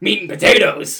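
put-on anger. Asked to say a phrase like you're angry, acting angry. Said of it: "Now say it like you're angry".

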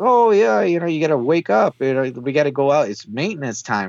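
put-on odd, weird accent, sort of Irish. Describing a character who talks to her, imitating his weird Irish-sounding accent. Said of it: "He has this weird accent".

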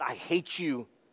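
put-on muttering under breath. Recalling being disciplined by parents as a child, retelling muttering under breath. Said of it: "utter under my breath".

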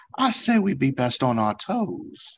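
cuddly cartoon-bear Southern belle voice. In a tabletop game, the turtle Ylar answers Eska: Pooh-like Southern belle voice. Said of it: "He sounds like a Winnie the Pooh mixed with like a Southern Belle".

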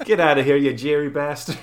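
put-on Boston accent. Giving a voice to a figure in an old article's picture, in a put-on Boston accent. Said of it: "I don't know why I'm giving him a Boston accent".

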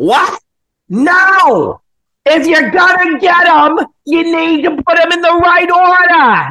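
put-on very high, shrill, loud screaming in old man voice. Telling a story about an old guy on the phone, the speaker imitates him screaming. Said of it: "he's screaming, bro".

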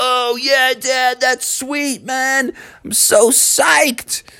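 put-on high-pitched, slow, drawn-out excited kid voice.

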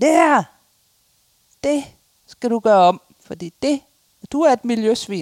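put-on shouting. Retelling the building caretaker shouting at the speaker, retelling a shout. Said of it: "råber han".

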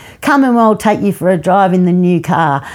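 ordinary talk, nothing marked

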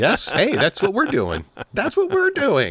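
high-pitched, mock eager tone.

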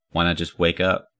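ordinary delivery

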